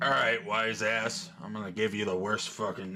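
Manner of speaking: muttered under his breath. Game master voicing the cook replying to a player, cussing under his breath. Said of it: "cussing, like, under his breath".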